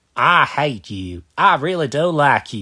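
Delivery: bad put-on Texas accent. Retelling what a man said while hugging: very bad texas accent. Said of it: "I'm sorry for my very bad, very bad uh, Texas accent".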